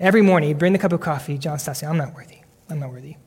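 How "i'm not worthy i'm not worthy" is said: muttered, much lower and quieter. Retelling what a man would say each morning over coffee, muttering under his breath. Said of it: "Kind of under his breath".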